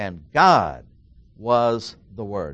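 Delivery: "God" punched loud and stressed hard.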